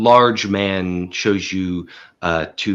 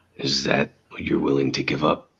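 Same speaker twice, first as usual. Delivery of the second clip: low gravelly voice, lower, quieter; 5 semitones lower, 4 dB quieter than usual. Voicing the silent cover man replying to you, in a low gravelly voice. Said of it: "It is a low, like gravel voice".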